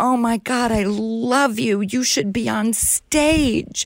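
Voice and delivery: high, light yelling call. Recalling spotting someone they admired and shouting out the window, retelling a yell. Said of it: "I just yelled out the window".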